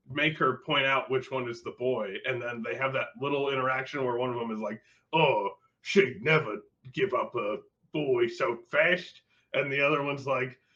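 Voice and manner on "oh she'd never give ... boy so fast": put-on very slow, drawn-out London cockney accent. Retelling a line from a show scene, in a Cockney accent. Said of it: "Cockney accent".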